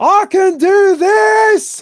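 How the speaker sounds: very high, very loud, slow, drawn-out booming bellow. Using a spell that makes the voice boom, in character: booming shout. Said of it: "There's no need to shout".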